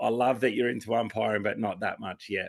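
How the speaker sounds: normal talking voice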